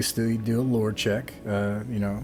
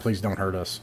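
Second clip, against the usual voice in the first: pleading, begging goblin voice. Voicing a goblin that surrenders on the ground: begging goblin voice. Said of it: "curls up into a ball and just begs".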